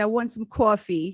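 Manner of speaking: put-on Long Island accent. A single mom recalls what she said one day, Long Island accent. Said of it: "why do I do a Long Island accent?".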